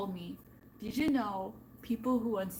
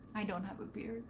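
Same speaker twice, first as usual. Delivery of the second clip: soft, sad, glum, downcast tone; 8 dB quieter than usual. Replying after praising the other's beard, mock sad. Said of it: "Why do you sound sad?".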